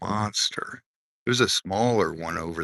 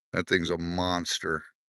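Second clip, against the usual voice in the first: usual speaking voice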